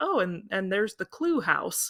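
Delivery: ordinary delivery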